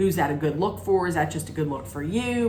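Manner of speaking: ordinary talk, nothing marked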